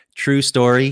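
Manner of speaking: plain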